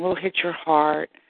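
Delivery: ordinary talk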